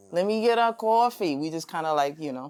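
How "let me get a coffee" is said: almost-Yiddish New York accent. Explaining how New Yorkers speak, the speaker demonstrates: New York Yiddish-like accent. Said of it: "We we carry an almost Yiddish like accent".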